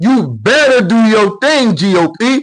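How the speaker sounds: mock screaming, demanding and pushy. Retelling how a woman yelled at the Republican Party, imitating her screaming. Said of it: "She's screaming at the Grand Old Party".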